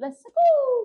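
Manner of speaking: very high, loud, bad put-on Italian accent. Two speakers trading impressions; one says a line in a put-on italian accent. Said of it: "my Italian accent".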